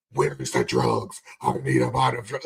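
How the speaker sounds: very low, deep superhero voice. Mocking how Bruce Wayne talks once he becomes Batman, in Bale Batman voice. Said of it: "And he becomes Batman".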